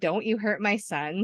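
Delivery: ordinary talk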